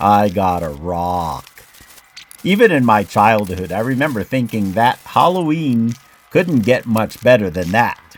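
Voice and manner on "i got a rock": low, slow, sad delivery. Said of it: "with a sad tone in his voice".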